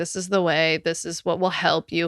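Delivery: ordinary delivery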